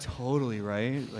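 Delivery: very sarcastic tone. Retelling replies to fans online, imitating own super sarcastic reply. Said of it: "or I'll be super sarcastic".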